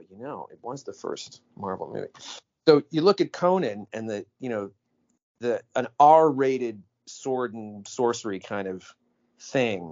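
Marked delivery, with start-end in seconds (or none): 0.0-2.1 barely audible, very quiet mutter under the breath. Retelling a podcast moment, imitating Tim Robbins muttering under his breath. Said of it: "just kind of like a little".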